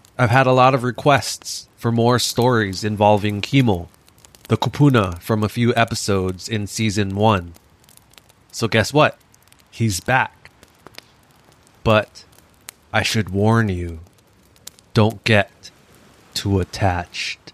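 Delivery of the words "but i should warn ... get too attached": eerie, halting, spooky ghost-story narration voice. Host introduces the episode to listeners, in a spooky voice. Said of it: "Spooky voice".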